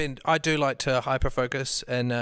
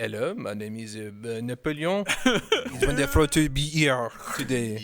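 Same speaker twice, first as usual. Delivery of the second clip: exaggerated, cartoonish French accent. Playing Napoleon and introducing himself: cartoony Napoleon French accent. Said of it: "I could do a great, uh, like, cartoony French accent".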